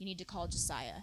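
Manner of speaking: grave, quiet, dead-serious voice. Retelling what her mom told her, imitating a really serious voice. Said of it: "in a really serious voice".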